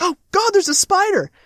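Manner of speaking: high-pitched startled cry. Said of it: "she's like".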